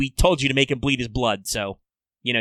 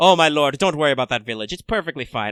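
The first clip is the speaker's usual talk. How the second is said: put-on haughty, snooty voice in strong Irish accent. Playing a shifty minister reassuring his lord: snooty voice slipping into Irish. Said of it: "I was trying to be snooty, but I became very Irish".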